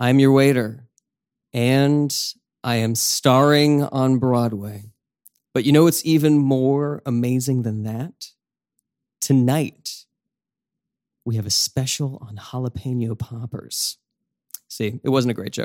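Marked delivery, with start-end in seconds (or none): 0.0-14.0 menacing, slow, drawn-out, sinister stage voice. Asked to make your old voice again, finish a less popular waiter joke in a sinister voice. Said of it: "Can you make that voice now?".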